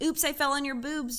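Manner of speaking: plain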